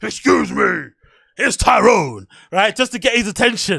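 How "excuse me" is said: stern, menacing, forceful put-on intimidating tone. Retelling trying to get past a man blocking the way, the speaker uses a put-on intimidating tone.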